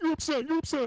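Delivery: mock whining and crying. Retelling how a man answered a raised voice: mock whining and crying. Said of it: "he whines and cries and says".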